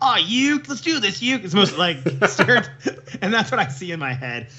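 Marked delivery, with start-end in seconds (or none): 0.0-1.4 higher-pitched American dubbed cartoon accent. Describing how a character sounds in their head, Yu-Gi-Oh blond American character voice. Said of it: "The American on Yu-Gi-Oh".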